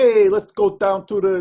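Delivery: put-on playful Chicago accent. Showing the listener how her accent sounds at fun times, imitating Terra's playful Chicago accent. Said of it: "your Chicago comes out at fun times".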